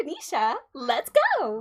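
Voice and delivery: high, peppy, perky cheerleader voice, swooping sing-song. Asked by co-hosts to bring out the cheerleader voice, [name] speaks: Venetia cheerleader voice. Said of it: "can you get like the cheerleader voice out".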